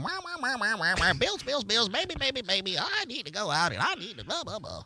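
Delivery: mocking put-on woman's voice. Acting out a woman when her man comes home from work; mocking impression of a woman. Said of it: "That's your impression of a woman?".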